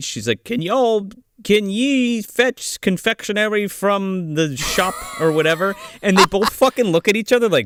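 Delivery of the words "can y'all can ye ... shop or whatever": put-on old-fashioned olde English, slow and archaic. Retelling how Catherine Winnick talked to the kids: old-fashioned "ye olde" speech. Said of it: "says this, like, ye old speech".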